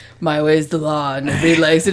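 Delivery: dead serious dumb voice, dropped low. Imitating Steven Seagal coming into a workplace in total seriousness: stupid Steven Seagal voice. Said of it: "in that stupid fucking voice that he has".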